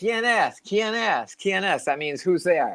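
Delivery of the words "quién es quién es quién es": very slow, high, drawn-out, stretched calling out. Retelling yelling to find out who's at the gate, retelling a yell. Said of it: "and I yell".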